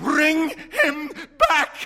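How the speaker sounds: shrill, very high outcry at full volume. The old woman drags him toward the door, crying out. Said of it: "cried the old woman".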